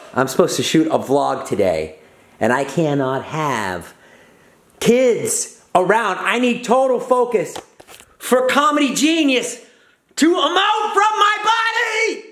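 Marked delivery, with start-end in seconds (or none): 6.2-12.2 loud comic rant, high, rising shout. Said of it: "You're too loud".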